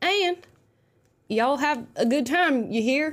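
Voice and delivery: put-on Southern-accented speech. Host signing off to viewers at the end of the video, in a Southern accent. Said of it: "Had to throw some southern accent into that".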